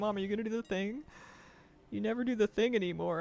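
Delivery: put-on anxious, insecure, worried dog voice. Voicing a dog that misses being hugged: voicing a worried, insecure dog. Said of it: "He was so worried".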